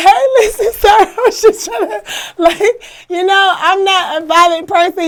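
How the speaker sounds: very high, tearful, breaking down crying. Retelling pleading with a detective: retelling crying while pleading. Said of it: "I just start breaking down crying like".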